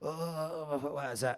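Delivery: rough woman's voice, words dragged very slowly. Retelling a phone call that woke the wife's friend: imitating a rough-sounding woman. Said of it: "That's what she sounds like".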